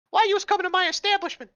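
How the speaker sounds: squeaky, very high, loud put-on voice. Redoing a character's line after a wrong voice: high-pitched character voice. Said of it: "that was high pitched".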